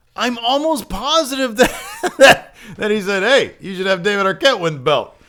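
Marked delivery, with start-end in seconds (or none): 3.3-5.1 plainly unserious, light, jesting tone. Quoting a suggestion someone made in jest: imitating a joking tone. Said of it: "if you say it in that intonation, everybody knows you're joking".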